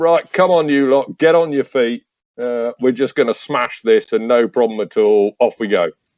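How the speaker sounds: sarcastic, take-charge rallying delivery. Retelling jumping up to lead the exhausted boys: imitating own sarcastic rallying call. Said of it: "desperately trying to be sarcastic".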